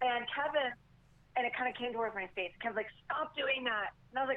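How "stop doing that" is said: stern, sharp scolding yell. Retelling a python moving toward the face: imitating Kevin yelling. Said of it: "Kevin's yelling at me".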